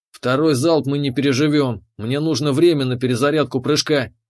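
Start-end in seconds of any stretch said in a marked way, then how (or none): none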